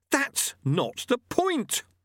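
heated, hot, very high-pitched voice. Lobsang answers Lutse after they are lowered to the ground, hotly. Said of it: "said Lobsang hotly".

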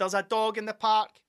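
calling out, shouting loudly. Speaker re-enacts what they started shouting in the park; retelling shouting. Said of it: "I just started shouting".

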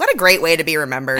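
ordinary talk

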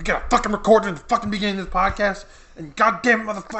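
mock furious cursing rant, very high-pitched. Retelling own thoughts after a frustrating Walmart stop: retelling own furious rant. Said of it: "I was just furious".

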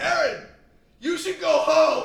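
very high, shrill, carrying yell. Retelling being told to go home from downstairs, retelling a yell. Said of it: "He yelled at me from downstairs".

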